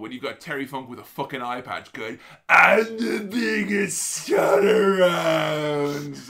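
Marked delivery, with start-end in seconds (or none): 2.5-6.2 menacing, very slow raised yell, "around" stretched out. Retelling how Terry Funk says it in wrestling, scary Terry Funk impression. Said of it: "He says it in the scariest way possible".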